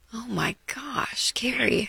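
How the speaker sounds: soft, slow, shocked, hushed gasping whisper.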